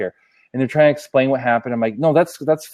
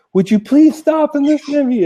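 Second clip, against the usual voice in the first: very high-pitched, exasperated yell; 13 semitones higher, 4 dB louder than usual. Retelling yelling at a customer service agent over the phone, retelling a yell. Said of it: "So I'm like yelling".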